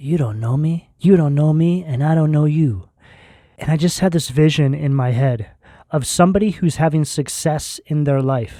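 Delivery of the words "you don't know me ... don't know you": put-on old-school, old-time gangster movie mobster voice. Recalling a phrase they kept saying over and over, in an old mobster voice. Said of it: "saying over and over in an old mobster voice".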